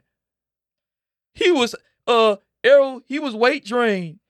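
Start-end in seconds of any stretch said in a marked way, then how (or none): 1.3-4.1 high-pitched, slowed, mocking whine. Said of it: "y'all start saying".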